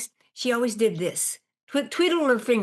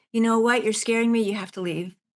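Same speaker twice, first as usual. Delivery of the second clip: understated, gentle, calm, low-key tone. Retelling telling a ghost to leave: imitating saying it very quietly. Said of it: "and I said very quietly".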